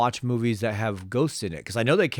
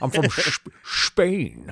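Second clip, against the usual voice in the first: very slow, swooping "Spain" with hard sh; 2 semitones higher than usual. Joking about Sean Connery saying where he's from: Sean Connery impression. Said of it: "Sean Connery says it".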